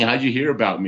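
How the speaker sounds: plain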